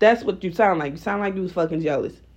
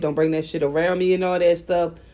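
usual speaking voice

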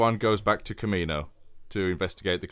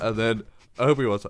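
usual speaking voice

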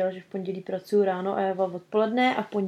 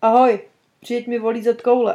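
very loud, put-on Indian accent; 3 semitones higher, 10 dB louder than usual. Retelling what a caller said on the phone, in an Indian accent. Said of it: "Taky indický přízvuk".

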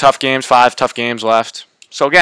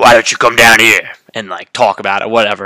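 put-on Cajun accent, quick; 2 semitones lower than usual. Retelling a football coach answering a heckling fan, Coach O Cajun accent. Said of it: "with his great Cajun accent".

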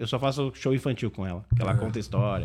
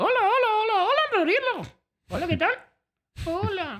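put-on drunk ventriloquist puppet character voice, higher. Performing the ventriloquist puppet who is drunk on tequila: drunk ventriloquist puppet voice. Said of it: "ele tá bêbado de tequila".

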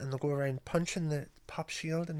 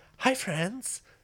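bubbly public-speaking voice, pitched up and loud; 6 semitones higher, 5 dB louder than usual. Podcast hosts discussing the voice put on for public speaking; bubbly persona voice. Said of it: "Like a bubbly persona".

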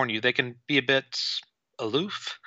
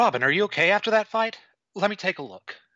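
higher-pitched female character voice; 7 semitones higher than usual. Voicing Lynn in a support scene, checking on Robin after a fight; Lynn voice. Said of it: "I'm going to have you do the Lynn voice".

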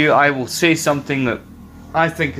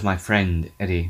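play-acted low-spirited, gloomy, depressed tone; 7 semitones lower, 4 dB quieter than usual. Quoting a line about his friend Eddie: imitating a depressed voice. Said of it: "You can tell he's depressed when he says".

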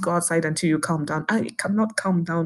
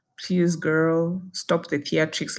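plain

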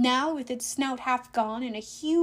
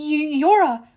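stammering, higher and louder; 3 semitones higher, 7 dB louder than usual. Narrator reads the first-person hero speaking to Tyson, stammering. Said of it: "I stammered".

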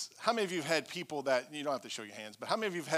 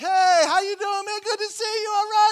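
mock carefree and cheery, very high and very loud; 14 dB louder than usual. Retelling greeting people without knowing they were upset: imitating a happy-go-lucky greeting. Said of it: "I'm walking around happy-dory".

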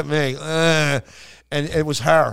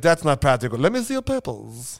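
put-on German accent, deadly serious tone. Speaker recounts a German man asking what he wanted for Christmas, imitating a deadly serious German. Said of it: "This guy was deadly serious".

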